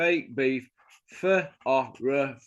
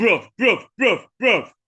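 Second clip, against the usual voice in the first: mimicked side-of-mouth talk, louder; 7 semitones higher, 6 dB louder than usual. Mocking an aging fighter who keeps running his mouth, talking out the side of the mouth. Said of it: "still talking out the side of his mouth".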